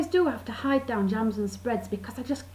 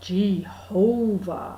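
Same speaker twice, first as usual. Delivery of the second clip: very slow Jehovah with stressed middle syllable. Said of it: "you kind of say it real slow and you emphasise the middle bit".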